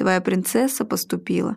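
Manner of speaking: ordinary delivery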